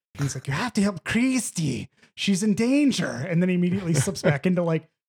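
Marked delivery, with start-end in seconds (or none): 0.5-3.1 shrill cartoon voice with wild, swooping pitch swings. Retelling a guy in a hospital scene suddenly switching voices, in Ren from Ren and Stimpy voice. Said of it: "he slips into like full Ren from Ren and Stimpy".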